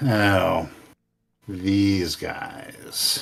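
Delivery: soft, mocking, sarcastic tone. Narrating a fight, one of the enemies remarks in a sarcastic voice. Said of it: "say in that familiar sarcastic voice".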